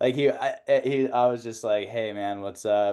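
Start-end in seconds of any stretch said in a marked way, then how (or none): 1.9-2.9 put-on relaxed, very low-energy, low-pitched voice. Recalling how they sounded on calls after Burning Man, imitating a low-energy greeting. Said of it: "just super low energy and like chill".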